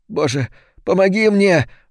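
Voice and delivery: desperate, high cry, voice cracking. Falko, trapped while Vulcan taunts him, crying out, voice cracking. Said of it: "воскликнул Фалько".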